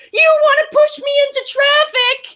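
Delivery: acted, very high, shrill, outraged shrieking yell. Retelling how he yells back at a warning about traffic: imitating someone yelling. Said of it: "clutches his panties to his fucking chest and yells".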